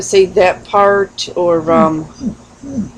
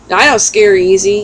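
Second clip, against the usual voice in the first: usual speaking voice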